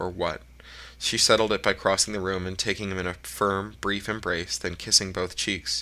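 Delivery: ordinary delivery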